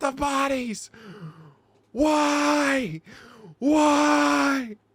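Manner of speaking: very loud, very high, slow, shrill, drawn-out panicked cry. Retelling a scene where a man screams in someone's face: imitating someone freaking out. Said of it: "He is freaking out".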